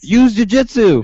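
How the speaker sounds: put-on screaming. Imitating someone at local fights: imitating a fan screaming. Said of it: "you'll hear somebody scream".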